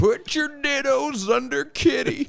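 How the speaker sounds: creepy, squeaky, very high teacher voice. Recalling a man who kept a kitty in a jar, imitating how he talked. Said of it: "he would talk like this".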